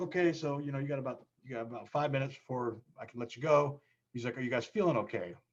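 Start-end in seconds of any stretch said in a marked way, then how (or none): 0.0-3.8 put-on fast talking, much higher. Quoting a military man checking on them before letting them go, imitating fast talking. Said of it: "he's talking really fast".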